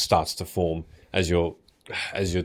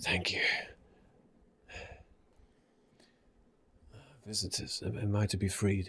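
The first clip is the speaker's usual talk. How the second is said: slightly gravelly, rough-edged voice, faltering and hesitant; 2 semitones higher, 8 dB quieter than usual. Voicing a thirsty prisoner asking the party for water: slightly gravelly voice. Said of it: "with a bit of a gravelly voice".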